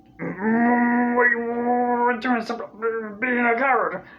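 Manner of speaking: raspy cartoon character voice. Showing how to voice a cartoon character: Rick voice. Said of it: "so when I'm doing Rick".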